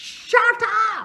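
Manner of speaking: very high, very loud, shrill shout. Arguing over which dog is better, one character shouts at the other: shouting.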